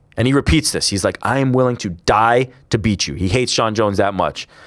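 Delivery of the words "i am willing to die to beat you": furious, animated, seething angry voice. Retelling a fighter's threat to his rival at a face-to-face: imitating Cormier seething with anger. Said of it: "He's, like, seething. He's angry".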